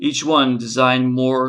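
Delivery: ordinary delivery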